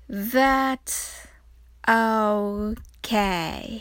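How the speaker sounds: slow, drawn-out delivery.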